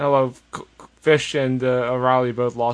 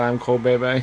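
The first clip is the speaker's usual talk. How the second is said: ordinary talk, nothing marked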